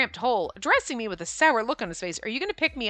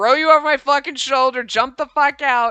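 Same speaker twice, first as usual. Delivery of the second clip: put-on mad, irritated, pissed-off, fed-up voice; 8 dB louder than usual. Reacting to a game image of Shu's pissed off face: imitating a pissed-off Shu. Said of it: "Look at his pissed off face".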